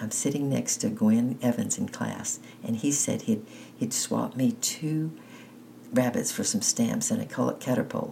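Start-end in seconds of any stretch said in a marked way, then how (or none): none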